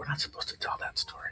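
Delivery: very quiet, breathy, hushed, secretive whisper. Retelling an older lady's answer when asked why she is whispering; retelling a whisper. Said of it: "why are you whispering?".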